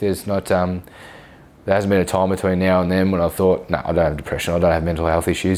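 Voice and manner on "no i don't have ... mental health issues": ordinary talk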